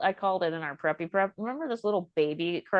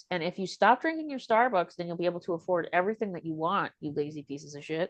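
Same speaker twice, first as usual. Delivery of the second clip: plain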